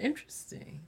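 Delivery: soft whisper, knowing, suggestive and teasing.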